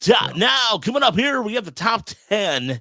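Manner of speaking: very high, loud, cliché radio announcer delivery. Joking about the show's top ten segment, cliche radio announcer voice. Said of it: "some radio cliche thing".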